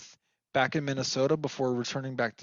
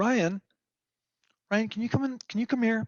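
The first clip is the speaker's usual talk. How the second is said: calm put-on call, pitched up, as if distant; 9 semitones higher than usual. Retelling how the mother called from the kitchen fire: imitating mom speaking calmly. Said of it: "she said it so calmly".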